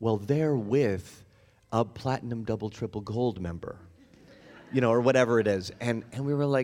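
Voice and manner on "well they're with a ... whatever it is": mock patronizing, low, condescending talking-down voice. Retelling someone explaining why another person was let in, imitating a condescending tone. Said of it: "in a very condescending voice".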